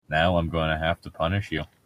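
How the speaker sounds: put-on low, flat, emotionless, dead-sounding monotone drone. Acting out how a woman scolded Edward, imitating her flat monotone. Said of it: "in her like stupid monotone voice".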